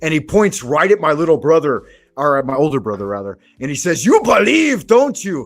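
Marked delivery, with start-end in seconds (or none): 4.1-5.5 put-on heavy Austrian accent laid on thick, pitched up. Retelling what a big man said to the speaker's older brother, thick Austrian accent. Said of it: "thick Austrian accent".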